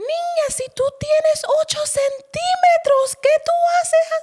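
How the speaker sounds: put-on shout. Retelling the nurse checking her during labor, imitating a nurse yelling. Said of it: "empieza a gritar".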